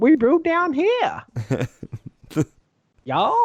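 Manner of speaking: put-on Texas accent, very high, loud and swooping. Describing a quadruple from Real Ale Brewing Company, the speaker puts on a Texas accent. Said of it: "Texas accent?".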